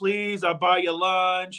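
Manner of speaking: mock begging, pretend pleading. Joking about a team that doesn't want the division: mock begging.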